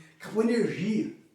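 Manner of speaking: ordinary delivery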